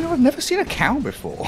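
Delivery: put-on mopey, self-pitying, sad, soft, swooping voice. Mimicking another speaker's earlier words back to them: imitating someone sounding sad. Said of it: "You sounded so sad when you're like".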